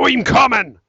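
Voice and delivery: high-pitched, loud yelling.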